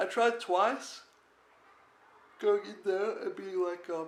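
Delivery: speaking through a yawn. Speaker telling about waiting around after dinner, yawning while talking. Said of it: "sorry, I'm yawning".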